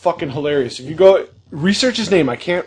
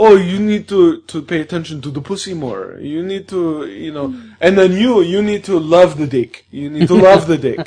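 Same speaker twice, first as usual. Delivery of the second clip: English spoken with a put-on French accent. Retelling how an actor critiqued a couple the next morning, in a French accent. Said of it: "so he had like a French accent".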